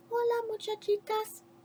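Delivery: very quiet, very soft, high little voice. Reading a story aloud, the kitty boy greets the girls in a very soft voice. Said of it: "he said in a muy, muy soft voice".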